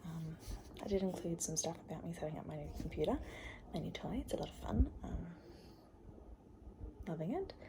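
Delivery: whispered voice. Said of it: "I'm whispering because my dad and mum are".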